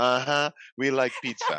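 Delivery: put-on Nigerian accent. Imitating a viral audio of a nigerian man: put-on nigerian accent. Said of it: "it's a Nigerian, yeah, he goes".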